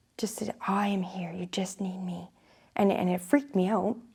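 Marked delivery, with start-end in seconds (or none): 0.7-2.3 gentle, steady, soft, calm, quiet voice. Retelling a voice that spoke and frightened the speaker, a soft, calm voice. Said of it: "It was like a soft, calm voice".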